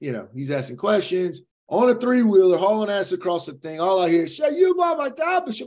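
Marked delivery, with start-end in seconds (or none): 4.3-5.5 put-on heavy Cajun accent, pitched very high. Speaker retells what a man on a three-wheeler said, in a thick cajun accent. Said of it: "he is just in the biggest Cajun accent".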